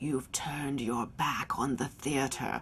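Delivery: deep, soft, smoky, sexy actor's voice. Recalling what he said to you about the theater, imitate Jason's deep, smoky, sexy voice. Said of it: "in that deep voice, that kind of deep, smoky, sexy voice he had".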